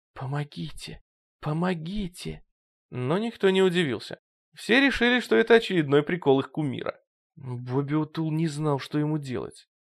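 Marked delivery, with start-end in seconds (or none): 0.2-2.5 hushed whisper, much quieter. A man being tied to a chair calls out, whispering. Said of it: "Слушатели услышали шепот".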